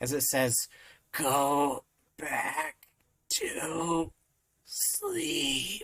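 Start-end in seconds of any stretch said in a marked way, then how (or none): 1.1-5.8 feeble, strained, pathetic, very slow voice. Narrating a scene, the speaker voices the thing's reply, pathetic and barely able to talk. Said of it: "the most pathetic voice come out of its throat, barely able to talk".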